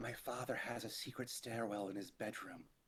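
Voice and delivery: hushed, secretive half-whisper. Voicing a ghost who tells a player a secret: half-whisper. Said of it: "she whispers".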